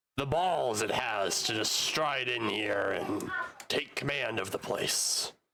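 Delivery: goblin chief voice. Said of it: "The goblin".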